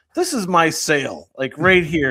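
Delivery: worked-up, furious, angry ranting outburst. Retelling a movie scene at a restaurant: imitating a furious character. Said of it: "he's really furious".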